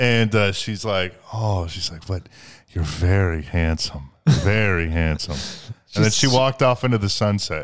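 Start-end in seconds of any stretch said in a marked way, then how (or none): 1.3-5.4 mock-seductive voice, slower. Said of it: "She said in that like seductive voice also".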